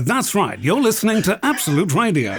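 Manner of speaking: radio announcer voice. Retelling answering the radio ident from a cab's back seat: retelling his radio ident voice. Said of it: "you sound exactly like the bloke that's doing this advert".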